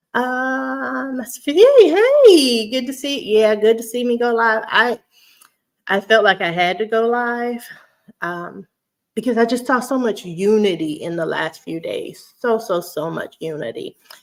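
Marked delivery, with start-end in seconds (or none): 1.5-4.7 high, loud, bubbly voice. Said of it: "I get all bubbly".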